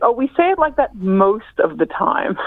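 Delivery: normal talking voice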